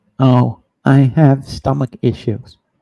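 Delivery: very loud motherly voice. Acting out a Mother's Day phone call, imitating his mother. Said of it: "can you do an impression?".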